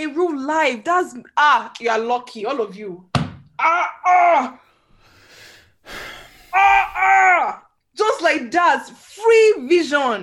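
very loud shouting, yelling at full volume. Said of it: "the way you're shouting".

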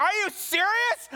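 very high, loud, shrill outburst of disbelief. Retelling a coworker's reply on speakerphone: imitating a loud reply. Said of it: "Like, loud".

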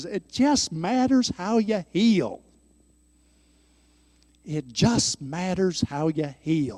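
put-on easy, drawling Texas accent. Teaching a lesson, quoting Wayne in his high-pitched Texas drawl. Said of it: "in his wonderful Texas drawl and his high-pitched voice".

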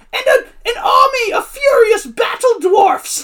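very high-pitched, loud narrator announcing voice. Retelling how a guy narrated a quest between songs, imitating a high-pitched voice. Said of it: "the guy would do this high-pitched voice".

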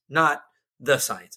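stress hitting the word the. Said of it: "it would be to science".

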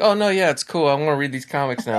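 mock sulky, hurt kid pretending it's fine. Imitating a movie character whose feelings are hurt: imitating a kid with hurt feelings. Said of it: "this is what you do when you're a little kid and you get your feelings hurt".

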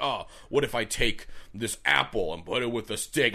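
put-on caveman character voice. Imagining a caveman cooking a steak who gets an idea: caveman voice. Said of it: "that's why I'm doing this voice".

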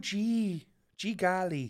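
high-pitched Midwestern Minnesota accent. Asked to do the midwest one, the speaker tries a minnesota midwest accent. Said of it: "do the Midwest one".

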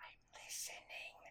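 breathy, hushed, very quiet, barely voiced whisper. Trying to hear a voice in the fog, the speaker answers whispering. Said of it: "Why are you whispering?".

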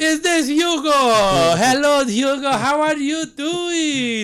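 "hello" very high, very slow, stretched, bad caricature. Playing the psychic answering a kid's prank call: Miss Cleo impression. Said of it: "That sounds super Boston Beaner".

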